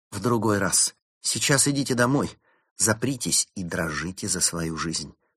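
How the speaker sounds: ordinary delivery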